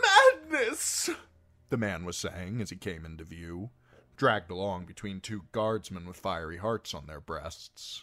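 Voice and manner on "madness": very high, loud, pleading, begging shout. A man dragged along between two guardsmen, pleading and shouting. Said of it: "pleading and shouting".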